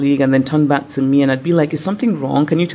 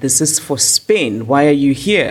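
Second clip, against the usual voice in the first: mocking, snooty, haughty French manner. Retelling what the immigration man said at the airport: imitating a haughty French official. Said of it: "in that sort of haughty, thin-faced French way".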